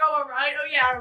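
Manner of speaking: ordinary talk, nothing marked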